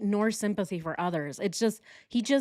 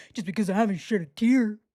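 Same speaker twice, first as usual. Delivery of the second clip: mock sniffling voice; 4 dB louder than usual. Mocking a man's fake crying: imitating Chris Watts sniffling. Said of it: "Then sniffles".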